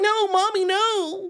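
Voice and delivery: very high, whiny, pleading nerd voice. Imitating a caught movie nerd, mocking whiny nerd voice. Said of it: "He's like".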